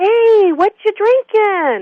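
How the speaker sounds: very slow, very high, drawn-out friendly call. Retelling an old man on a train calling out to a stranger, imitating a friendly yell. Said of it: "he yells out in the most friendly tone".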